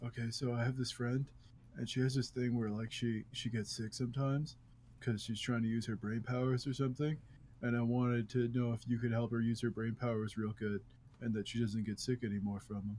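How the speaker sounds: hushed, soft, secretive half-whisper throughout. Playing a character who sneaks up and asks a wish: half-whispering in character. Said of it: "I'm gonna whisper to it".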